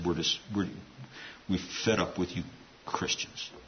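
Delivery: put-on soft, hushed Russian accent.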